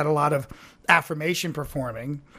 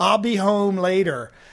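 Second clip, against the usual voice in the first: put-on slow, drawn-out Philadelphia or Baltimore accent; 4 semitones higher than usual. Retelling an audition line for a play: imitating own past philly accent. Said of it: "either Philadelphia or Baltimore".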